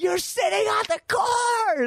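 put-on shrill, very high-pitched shouting. Retelling how everyone yelled at a cousin during a race; retelling people yelling. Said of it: "they're all yelling at him going".

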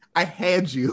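ordinary talk

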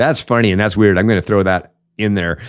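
ordinary talk, nothing marked

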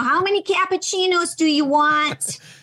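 high Michigan accent. Recalling a video game voiceover role as a waitress, in a Michigan accent. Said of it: "the Michigan accent".

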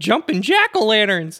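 shouted exclamation. Playing a character fleeing a giant pumpkin monster: yelling as Shaggy. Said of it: "running away from the jack-o'-lantern yelling".

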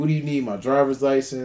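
ordinary talk, nothing marked

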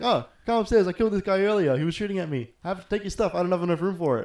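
put-on New Zealand accent. Retelling what a stranger in the game asked: imitating a New Zealand accent. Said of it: "this Kiwi guy".

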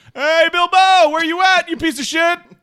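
very high, loud hollering call. Playing a character calling upstairs for Bilbo: yelling for someone. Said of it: "I start yelling for".

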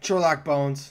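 angry, sore, mad-sounding voice. Quiz host gives the riddle answer to the players, sounding angry. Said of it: "Why'd you sound so mad when you said Sherlock Bones?".

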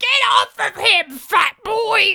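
put-on crazy old lady screaming, very high, shrill, drawn out. Retelling a film scene where an old lady screams at a kid: imitating an old lady screaming. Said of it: "her face screaming directly at you".

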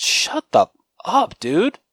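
very high, loud, swooping, drawn-out delivery. Retelling a reply to the man in the cinema: retelling saying it loudly. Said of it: "I actually said it pretty, pretty vocally".

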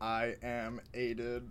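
robotic impression. Saying one's name in the podcast intro: robot impression. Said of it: "this is your best robot impression?".

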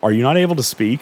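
mock-worried, suddenly concerned, caring tone. Retelling what a game character with a mohawk asks the player: imitating sudden concern. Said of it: "concerned all of a sudden".

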